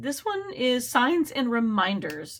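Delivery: breaking, cracking voice mid-line. Introducing the Angel Oracle Guide deck, the speaker's voice cracks. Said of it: "I felt like my voice cracked".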